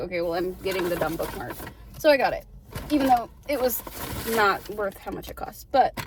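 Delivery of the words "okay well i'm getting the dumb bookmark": ordinary talk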